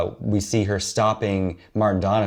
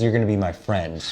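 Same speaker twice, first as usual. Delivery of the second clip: ordinary talk, nothing marked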